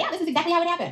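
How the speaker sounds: high, blandly certain, matter-of-fact. Imitating Jen telling her story, mock matter-of-fact tone. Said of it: "Jen tells this story with such, like, matter of fact".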